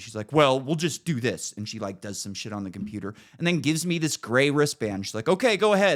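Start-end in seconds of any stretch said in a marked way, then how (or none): 0.3-1.5 put-on exasperated huffing and puffing, slower. Speaker retelling what a woman said to them, imitating someone huffing and puffing. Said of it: "she's like huffing and puffing".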